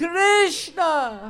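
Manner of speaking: loud ecstatic shout.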